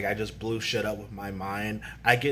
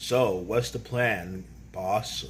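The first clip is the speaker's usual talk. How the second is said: normal talking voice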